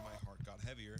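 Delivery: plain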